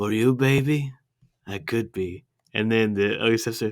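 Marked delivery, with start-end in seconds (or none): 0.0-2.2 slow, lingering film-star voice, words drawn out. Doing impressions from the movie: Antonio Banderas impression. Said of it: "We've got Antonio Banderas".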